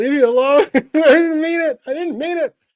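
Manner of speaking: high, loud, flustered mock yelp.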